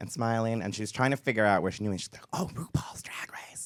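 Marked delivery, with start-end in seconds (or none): 2.3-3.7 loud, slow, carrying, barely voiced stage whisper. Retelling what a woman on an escalator said: imitating a loud whisper. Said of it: "whispering, like, that loudly".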